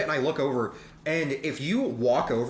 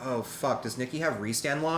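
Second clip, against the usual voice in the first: normal talking voice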